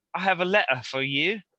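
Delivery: non-rhotic British accent. Teaching how British speakers drop the r, demonstrating in a British accent. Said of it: "that's a good British accent".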